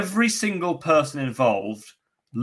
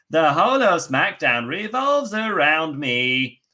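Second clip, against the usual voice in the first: put-on offhand, careless Boston accent; 3 semitones higher than usual. Mocking a wrestler's SmackDown promo, imitating Sasha's Boston voice. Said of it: "in her Boston voice".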